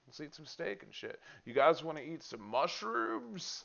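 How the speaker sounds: mock super chill tone. Imitating an anime character who suddenly acts friendly: imitating a super chill character. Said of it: "his personality is just like".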